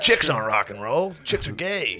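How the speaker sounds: teasing, mocking put-on cool-guy voice. Imitating another speaker's take on the show, in his cool voice. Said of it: "is that your impersonation of me?".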